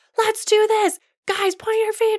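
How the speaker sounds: very high, loud shouting. Showing how you yell at teen dancers in class, yelling at dancers. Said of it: "you're yelling at them and you're like".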